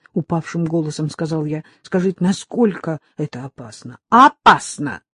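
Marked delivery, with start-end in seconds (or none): 4.1-5.0 energetic, vigorous, higher pitch. A woman answers the father's question about how dangerous it is, energetically. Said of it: "энергично ответила она".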